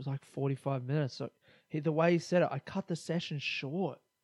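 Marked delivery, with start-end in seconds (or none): 2.5-4.0 mock, soft, dejected, disappointed, let-down tone. Retelling how he described cutting his skate session short, mock disappointed tone. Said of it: "He was so disappointed in himself".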